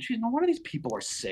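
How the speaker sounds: fed-up, exasperated tone. Retelling a general's reaction to sick soldiers: imitating an eye-rolling, exasperated Lee. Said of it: "he's just rolling his eyes going".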